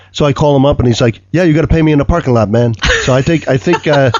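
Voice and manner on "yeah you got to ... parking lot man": put-on North American accent, faster. Retelling calling up a man about the unpaid ads: imitating his regional accent. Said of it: "what part of North America he's from".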